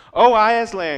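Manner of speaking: very loud, high cry, frightened yet glad. Narrator reading the children seeing Aslan, crying out, frightened and glad. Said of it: "cried the children, ... almost as much frightened as they were glad".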